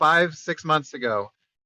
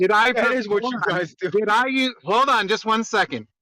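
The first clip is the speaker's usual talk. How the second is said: heated, high-pitched shouting; 6 semitones higher than usual. Arguing with others in a group discussion, yelling. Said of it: "Why are you yelling?".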